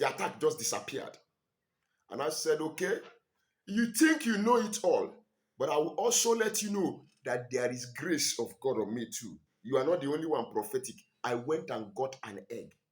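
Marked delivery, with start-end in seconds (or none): none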